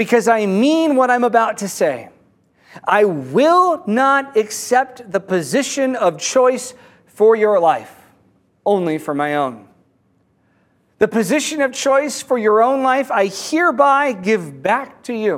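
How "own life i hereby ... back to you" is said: ordinary talk, nothing marked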